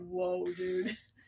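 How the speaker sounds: startled soft aside. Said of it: "And I'm like".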